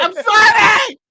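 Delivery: very loud, very high, apologetic yell. Imagining riding a horse carriage onto the freeway, pretend yelling to a car. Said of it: "yelling to the car".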